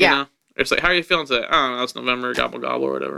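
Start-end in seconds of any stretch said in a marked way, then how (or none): 2.3-3.2 dead-level, flat, zero inflection, no lift at all. Showing how to say a line lamely, flat with no inflection. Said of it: "if you just kind of say it lame without any inflection".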